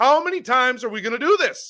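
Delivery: screaming into the mic. Ranting about a fielding error that lost the game: screaming into the mic. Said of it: "I know I'm screaming into my mic".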